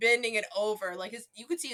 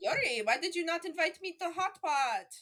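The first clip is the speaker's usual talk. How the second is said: strong, laid-on put-on Swiss accent, pitched up; 8 semitones higher than usual. Retelling a scene from an English show, quoting a character in a super Swiss accent. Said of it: "speaking in a super like Swiss uh, accent".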